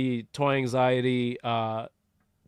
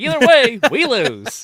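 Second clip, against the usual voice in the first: very high, very loud, shrill, swooping newsboy holler; 11 semitones higher, 12 dB louder than usual. Retelling another speaker's line in a newspaper boy headline voice. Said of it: "your best kinda news, news, uh, newspaper boy headline voice".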